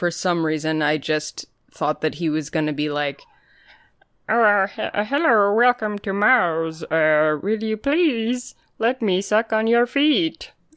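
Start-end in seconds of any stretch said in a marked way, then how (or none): 4.3-10.5 slow, drawn-out cartoon Martian alien voice. Speaker imagines how the cartoon character would talk: Marvin the Martian voice. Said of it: "doing the Marvin the Martian voice".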